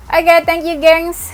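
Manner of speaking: out of breath, gasping. Wrapping up the video and thanking viewers while tired: out of breath. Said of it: "Ngos-ngosan aku capek banget".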